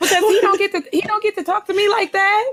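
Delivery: high-pitched, indignant, sassy, huffy rant.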